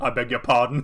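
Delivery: put-on prim, strict old woman voice. Retelling a film scene where an old lady replies: imitating a stern old lady. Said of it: "stern way an old lady can".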